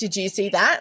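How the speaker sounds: ordinary delivery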